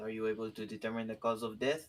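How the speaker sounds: put-on French accent. Playing a character asking about a corpse found in a tree: french accent. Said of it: "I'm using a French accent".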